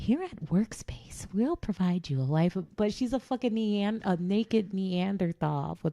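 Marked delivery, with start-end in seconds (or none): 0.0-2.8 very proper, polished, swooping voice. Imitating a naked Neanderthal character in a claymation: imitating a very proper voice. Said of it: "she's talking very proper, like this".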